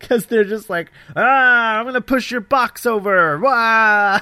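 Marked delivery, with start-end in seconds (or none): 1.2-4.2 deliberately amateurish acted delivery. Mocking the Luddite rioters' bad actors: mocking the bad actors' rioting. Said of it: "it's literally what they sound like".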